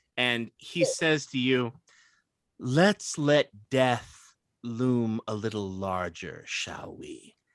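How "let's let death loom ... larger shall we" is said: low, menacing, half-whispered villain voice. Voicing the Shadow Master half-whispering through a conjured garden: half-whispering menacing villain voice. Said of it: "the Shadow Master's voice can be heard kind of whispering".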